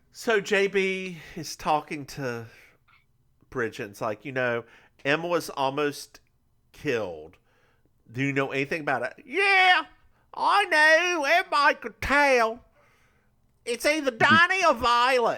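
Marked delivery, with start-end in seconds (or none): 4.2-15.3 put-on British accent drifting to New York, higher. Retelling a conversation between two characters: British accent drifting to New York. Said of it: "you just went from British".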